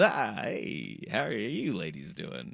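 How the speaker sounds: put-on neurotic character voice. Imagining Richard Kind greeting women: neurotic Richard Kind impression. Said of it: "being like the neurotic kind of".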